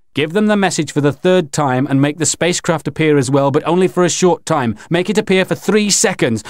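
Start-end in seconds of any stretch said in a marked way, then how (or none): none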